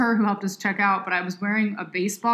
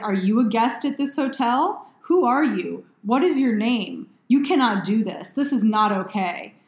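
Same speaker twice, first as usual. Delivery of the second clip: imitated voice of a furious, angry woman. Retelling how a woman scolded the speaker at a hotel: imitating a furious woman. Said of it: "she is so freaking mad at me".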